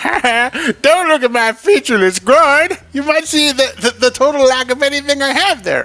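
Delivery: very high, loud, slow dragon voice. Voicing an embarrassed dragon who is naked: voicing the dragon Modesty. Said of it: "I don't know why that's his voice".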